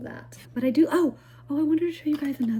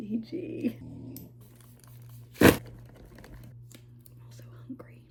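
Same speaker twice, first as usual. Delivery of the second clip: soft, unvoiced whisper. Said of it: "I don't know why I'm whispering".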